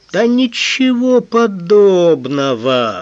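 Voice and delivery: hurt, high, offended outcry, last word stretched. A man denies the accusation just made against him, with an offended exclamation. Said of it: "обиженно воскликнул Цурумаки".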